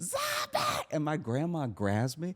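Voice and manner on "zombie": very high, piercing shriek at the top of the lungs. Retelling how they screamed right in a man's face: retelling a scream. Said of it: "I'm screaming in this man's face".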